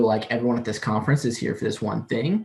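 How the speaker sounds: plain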